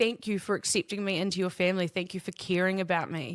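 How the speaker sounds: mock speaking through tears, crying, tearful voice. Retelling a thank-you speech someone made while bursting into tears: imitating someone crying. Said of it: "She was just crying".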